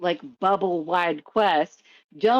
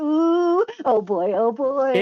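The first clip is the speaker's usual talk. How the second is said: very slow, high, drawn-out, overexcited manic AI voice; 7 semitones higher than usual. Describing how a game's ai delivers a quest: mimicking a manic excited ai. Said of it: "the A I is fucking manic. It is excited".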